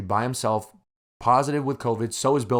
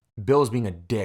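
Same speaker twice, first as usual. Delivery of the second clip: ordinary delivery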